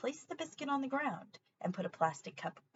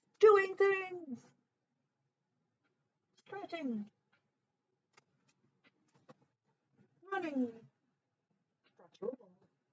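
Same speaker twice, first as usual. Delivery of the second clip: high-pitched dog voice; 5 semitones higher than usual. Telling about her dog and a treat game, doing a dog impression. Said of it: "I have to do more dog impressions".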